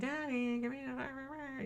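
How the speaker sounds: very high, very slow, pleading puppy voice. Retelling how the dog begs for a meat stick, voicing Pookie the dog.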